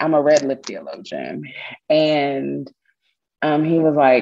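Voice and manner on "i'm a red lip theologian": ordinary talk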